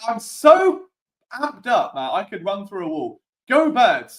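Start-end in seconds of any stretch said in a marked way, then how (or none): 3.5-4.2 high, full-throated, all-out screaming cheer. Signing off a live show to viewers: screaming. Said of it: "I'm screaming it at you now".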